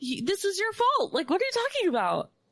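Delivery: put-on very high, swooping, incredulous, outraged yell. Recounting watching a tv documentary, retelling a scream at the tv. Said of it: "I'm screaming at the television".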